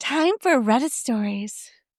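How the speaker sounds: tacky, slow, drawn-out announcer voice. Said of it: "clip that sound every time we move to Reddit".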